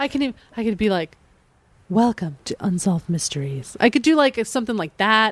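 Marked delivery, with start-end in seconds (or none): 1.9-3.8 voiceover announcer voice, much lower. The speaker shows how good they'd be as a voiceover person: voiceover person voice. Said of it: "Or a voiceover person".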